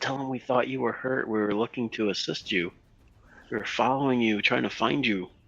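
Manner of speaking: hushed whisper. A figure speaking to him from the darkness, whispering. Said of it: "I'm whispering from the darkness".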